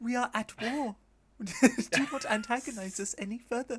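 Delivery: squeaky, high, loud sock-puppet voice. Complaining about a sock puppet, the speaker imitates it: imitating a high-pitched puppet voice. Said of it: "that high pitched voice like this".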